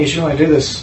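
ordinary talk, nothing marked

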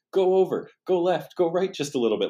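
very high, loud, shouted yelling. Recalling setting up a tripod shot, retelling yelling directions at him. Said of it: "I'm yelling at him to like".

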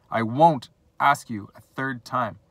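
loud, slow, forceful shout. Kotler demands an answer from Bruno: shouting. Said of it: "shouted Kotler, his face growing red".

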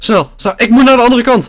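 high, fast, frantic, panicked rush, words tumbling. Searching for lost gear in a game, panicking and hurrying. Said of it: "Paniek, paniek".

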